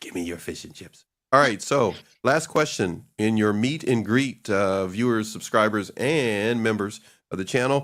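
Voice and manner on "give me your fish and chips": animated cat voice. Joking about coming over for fish and chips: Puss in Boots voice. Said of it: "Like Puss in Boots".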